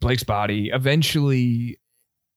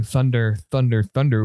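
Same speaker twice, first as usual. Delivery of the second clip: ordinary delivery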